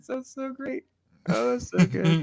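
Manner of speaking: very high, gasping through laughter, breathless. Reacting to another speaker's joke, laughing while talking. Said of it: "I might need a minute to catch my breath".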